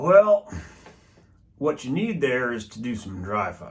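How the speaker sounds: seasoned elder gentleman voice. Mocking the advice given in the Bullseye community, in an elder gentleman voice. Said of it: "I'll use my elder Bullseye gentleman voice".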